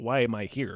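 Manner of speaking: mock dismissive indifference. Acting out a film character's attitude at his trial: imitating a dismissive attitude. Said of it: "the attitude is like".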